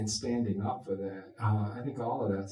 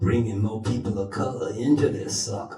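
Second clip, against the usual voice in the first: loud, put-on deep voice; 7 dB louder than usual. Speaker describing a department's recurring plan, voicing it: put-on deep voice. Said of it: "(In a deep voice)".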